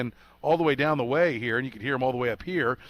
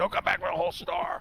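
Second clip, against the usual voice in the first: rough, gravel-voiced, gravelly voice; 4 semitones higher, 4 dB quieter than usual. Quoting what the wife always says: imitating the wife in a gravelly voice. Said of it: "Very gravelly voice".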